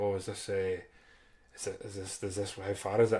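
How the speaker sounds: halting, hushed, nervous mutter under the breath. Retelling words said at the competition: imitating muttering under breath. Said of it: "under my breath".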